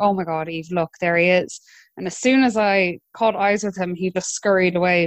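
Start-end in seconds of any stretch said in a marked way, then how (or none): none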